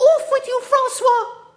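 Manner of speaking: urgent, breathless, very high cry. The Countess, climbing into the limousine while pursued, crying out breathlessly. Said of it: "she cried breathlessly".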